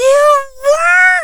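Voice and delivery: bursting, overexcited, high, loud amazed shout. Narrator reads a six-year-old girl's reply to the speaker, barely containing excitement. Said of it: "It was almost too much for her now 6-year-old self to contain".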